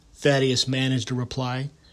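ordinary delivery

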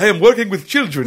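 put-on vampire voice with Transylvanian accent. Retelling a woman's line to friends, in a Dracula voice.

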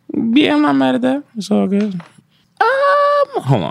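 rising high voice. Answering the group's question, his voice going high. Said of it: "His voice got high".

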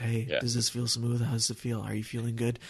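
very quiet, soft, calming, soothing voice. Recalling a Mazda ride, the speaker quotes the guy who talked to them: imitating a very soothing voice. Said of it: "with this very soothing voice".

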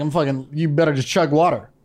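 ordinary talk

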